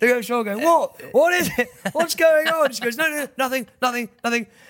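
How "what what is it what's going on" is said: acted panicked voice, much higher and slower. Telling a story, facing the wall and asking the woman behind what's wrong, retelling own panic. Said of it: "I'm panicking".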